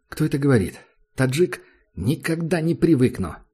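ordinary delivery

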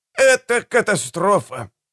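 heated, fervent tone. An old doctor agrees after their group blew up a whole city, heatedly agreeing. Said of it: "горячо согласился".

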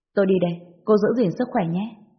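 ordinary delivery

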